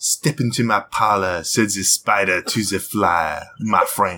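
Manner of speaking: put-on French accent, slow. Asked to perform Widowmaker's line; Widowmaker French accent. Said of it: "French character".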